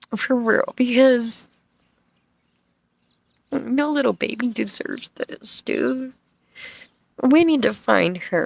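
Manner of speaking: tearful, fighting back tears. Talking to viewers about a missing little girl, choked up, crying. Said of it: "I shouldn't even be crying".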